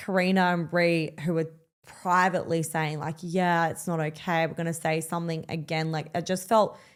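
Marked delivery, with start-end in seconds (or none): none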